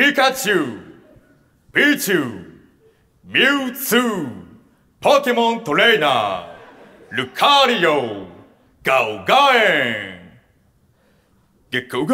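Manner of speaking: deep fighting-game announcer voice, rolling delivery. Doing the promised impression of the one odd choice among the options. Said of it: "それのモノマネやらせていただきます".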